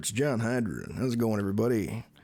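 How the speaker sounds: lopsided voice pushed out the mouth's corner. Explaining the voice he uses when playing a character, demonstrating it: John Hydra side-of-mouth voice. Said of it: "talk out of the side of my mouth more when I'm playing John".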